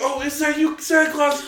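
very high, sweet, climbing little voice. Retelling how Kate asks while listening: imitating Kate, voice getting higher. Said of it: "her voice keeps getting higher and higher".

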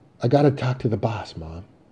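ordinary delivery

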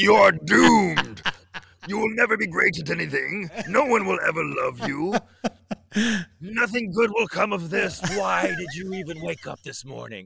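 loud, brash, obnoxious, overbearing dark doom voice. Voicing the darkness talking to someone: loud, obnoxious voice of darkness. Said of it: "the darkness is loud and obnoxious".

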